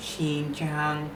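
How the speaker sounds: high level tone held on both Xin and Jiang. Speaker explaining why xinjiang is said this way: high tone on xin and jiang. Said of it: "Because Xin, high tone. Jiang, high tone".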